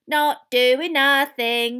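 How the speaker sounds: cackling at very loud volume, high pitch. Narrator reads Peeves's retort to Professor McGonagall; cackling Peeves. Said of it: "cackled Peeves".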